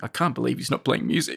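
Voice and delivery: put-on muttering under the breath. Acting out a director's complaint: imitating someone muttering under his breath. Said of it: "under his breath is muttering".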